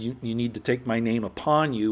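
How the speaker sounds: ordinary talk, nothing marked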